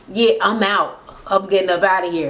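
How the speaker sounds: whispering. Retelling what a guest whispered to another guest on stage: imitating someone whispering. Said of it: "Peter is whispering to the other Todd".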